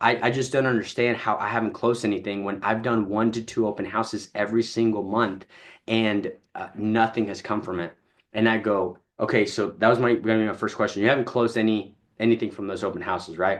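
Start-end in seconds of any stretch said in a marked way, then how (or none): none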